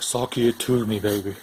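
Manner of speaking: drawn-out slow delivery.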